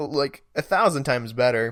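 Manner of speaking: ordinary delivery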